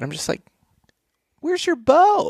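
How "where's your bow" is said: very high-pitched, playful, teasing, joking tone. Retelling a question to people going scouting, retelling a joking question.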